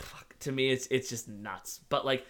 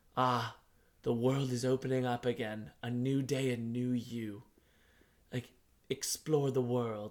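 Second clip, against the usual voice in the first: put-on slow, elderly British gentleman voice. Quoting a game character's random comments: imitating an old British man. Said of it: "old man British voice".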